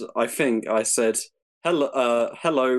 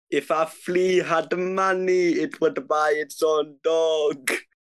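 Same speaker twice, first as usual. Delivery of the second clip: attempted Jamaican accent, pitched up; 5 semitones higher than usual. Reading a Jamaican proverb aloud on request, attempted Jamaican accent. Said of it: "If it's in a Jamaican had- accent".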